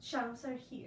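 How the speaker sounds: ordinary delivery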